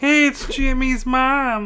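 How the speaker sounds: very high-pitched character voice. Asked to do his Carl Wheezer, the speaker attempts the voice. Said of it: "can you do your Carl Weezer?".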